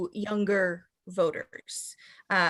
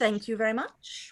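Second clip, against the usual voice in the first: generically British voice; 4 dB quieter than usual. Starting the accent picked for the game, generic british accent. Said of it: "I would like to go with generically British".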